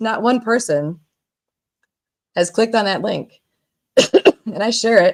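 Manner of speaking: coughing while talking. Complaining nobody clicked the shared link, coughing while talking. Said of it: "I swallowed wrong".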